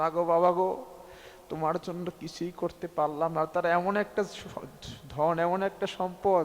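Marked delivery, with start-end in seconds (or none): none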